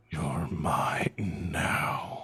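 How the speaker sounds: rasping, ragged voice with echo. Voicing a presence in a player's mind: ragged, raspy voice. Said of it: "ragged, raspy voice".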